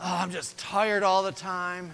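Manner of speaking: complaining, whining tone, high-pitched. Illustrating a complaining way of talking about being tired, whiny, complaining tone. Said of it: "I'm talking about that complaining tone".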